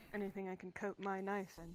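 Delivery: whispered in a character voice. Playing a character who asks a shopkeeper for poisons, whispering in character. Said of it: "She's gonna whisper".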